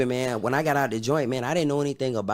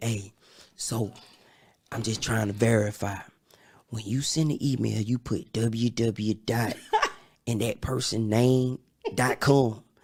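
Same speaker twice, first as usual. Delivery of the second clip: quiet, hushed whisper; 2 semitones lower than usual. Retelling what the speaker asked a lady about sending an email, whispering. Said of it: "like whispered to her".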